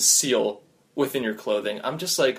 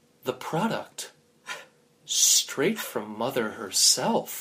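quiet, hushed, under-the-breath voice; 4 dB quieter than usual. Telling a story where the other speaker reveals a bag: hushed voice. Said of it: "In a hushed voice".

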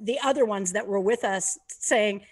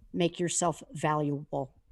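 put-on soft-spoken voice, lower and quieter; 5 semitones lower, 5 dB quieter than usual. Retelling a remark someone made while walking past: imitating a quiet remark. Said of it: "just very quietly said".

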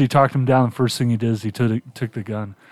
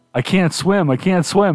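mock panicked scream, much higher pitch; 6 semitones higher than usual. Retelling how an actor screamed at the director, imitating panicked screaming. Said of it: "he's screaming at Herzog".

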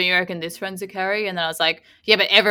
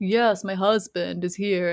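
put-on Russian accent, slower and quieter; 5 dB quieter than usual. Imitating a woman who sounds russian, in a russian accent. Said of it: "She sounds russian".

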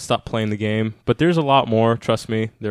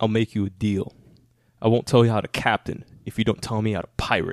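pirate villain movie voice; 4 dB quieter than usual. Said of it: "I'm the voice".

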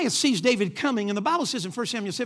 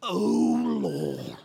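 put-on praying tone, low and rough; 4 semitones lower than usual. Speaker mocking how people change their voice when they pray: mock praying voice. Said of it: "Comes time to pray and they go to".

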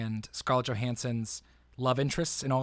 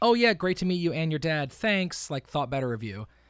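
put-on passive-aggressive tone, higher and louder; 4 semitones higher, 5 dB louder than usual. Retelling how Amy Schumer answered a man: mock passive-aggressive Amy Schumer. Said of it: "She was super passive-aggressive".

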